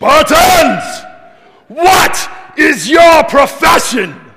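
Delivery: bellowed slowly and high. Retelling how he turns to his army: Leonidas voice. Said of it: "I'm going to try to do this in my best Leonidas voice here".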